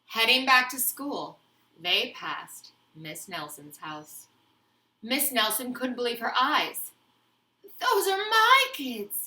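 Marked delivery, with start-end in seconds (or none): 7.8-9.2 very high-pitched, scratchy, slow, drawn-out voice. Reading a story: Miss Nelson spots her pupils out of school, in a scratchy voice. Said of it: "she said in a scratchy voice".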